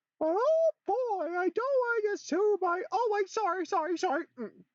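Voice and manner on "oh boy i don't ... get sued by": squeaky cartoon voice, much higher and louder. Trying voice acting for the first time, showing off a Mickey Mouse voice. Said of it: "I could also try Mickey Mouse".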